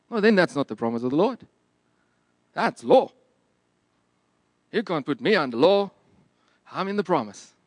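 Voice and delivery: failed, bad put-on American accent. Acting out someone else's quoted words: bad american accent. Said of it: "I'm trying my best to do an American accent".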